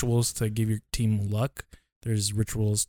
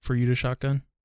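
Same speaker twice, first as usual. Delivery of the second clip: usual speaking voice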